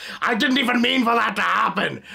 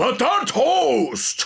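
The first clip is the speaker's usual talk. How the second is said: put-on dopey villain voice, higher; 4 semitones higher than usual. Answering what Ed and Darth Vader sound like together: Ed mixed with Darth Vader voice. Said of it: "Ed from Ed, Edd n Eddy and Darth Vader sound like together".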